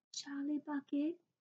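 timid, nervous, very quiet, small half-whisper. Reading a story aloud, a voice answering the roll call: small nervous half-whisper. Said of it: "a small nervous voice whispered".

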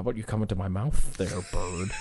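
very low, very soft, hushed cartoon cat voice. Showing the voice you can always do, talking to the bird in a Sylvester voice. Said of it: "I can always do Sylvester".

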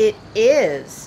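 proudly. Winston answers Rex's question about the splinter in his paw, proud. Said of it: "said Winston proudly".

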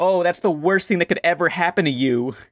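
dry, mocking, sarcastic sympathy. Retelling a video creator's reply to a cartoon character, mock-sarcastic.

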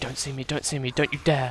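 barely-there, soft, hushed half-whisper. A streamer in a zombie game, as a horde runs past, half-whispering. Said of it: "I don't know why I'm whispering".

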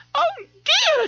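faint, feeble, weak voice, pitched way up. Narrator reading Miss Trixie finding someone fallen, speaking feebly. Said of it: "she said feebly".

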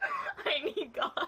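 high voice, laughing through the words.

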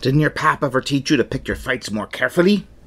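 swashbuckling pirate character voice. Taunting the other character in the middle of a quarrel: pirate voice. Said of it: "I haven't heard [name]'s pirate voice".

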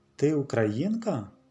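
surprised, astonished, wondering tone. A girl questions another girl holding an unusual doll: surprised question. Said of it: "здивовано запитала Софійка".

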